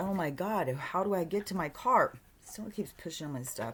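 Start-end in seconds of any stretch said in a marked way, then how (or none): 0.0-2.1 anxious, panicked, frantic cry. Retelling a dream of trying to reach the car: imitating own panicked voice. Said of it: "I'm really panicking".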